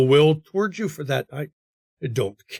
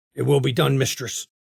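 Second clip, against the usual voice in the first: gruff, rough-edged voice; 3 dB quieter than usual. A guard answers the mistress's order: gruff voice. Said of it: "And with a gruff voice".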